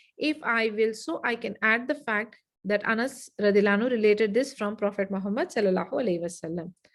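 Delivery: normal talking voice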